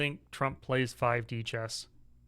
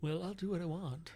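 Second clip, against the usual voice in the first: high, soft, strange weird voice. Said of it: "I will talk in a weird voice".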